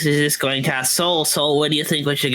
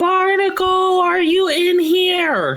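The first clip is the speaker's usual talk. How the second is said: very high, stretched, drawn-out battle-cry yell; 4 dB louder than usual. At a corridor junction, he calls out for someone, yelling at the top of his lungs. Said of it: "Really loud at the top of his lungs".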